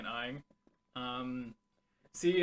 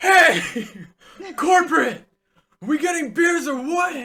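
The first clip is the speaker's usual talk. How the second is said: put-on very loud, slurred, shrill and booming drunken shout; 14 semitones higher, 13 dB louder than usual. Retelling a work story about the company's CEO, imitating a raging drunk CEO. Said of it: "he's like raging drunk".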